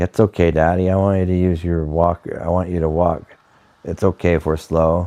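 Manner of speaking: ordinary talk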